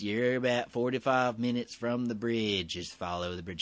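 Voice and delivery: flat, level, expressionless monotone drone. Retelling how a man staring at the speaker gave directions, imitating a monotone voice. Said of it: "talking to me in this monotone voice".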